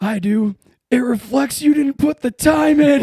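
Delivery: very loud, very high, scathing drill-instructor yell. Retelling an instructor's burn about an unshined boot: imitating an instructor drilling someone. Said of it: "and just drills him".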